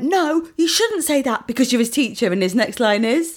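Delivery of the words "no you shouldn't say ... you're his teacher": exasperated, high-pitched shouting. Retelling a reaction to a teacher's line on screen: retelling shouting at the tv. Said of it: "I shouted at the T V and I went".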